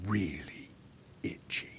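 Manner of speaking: hushed, breathy, near-whispered murmur. Game narrator adds an aside after a slurred drunken boast, hushed.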